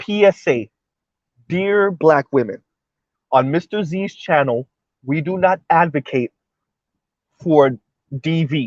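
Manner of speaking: slow, careful, deliberate, spelled out word by word. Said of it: "Let me say that again slow".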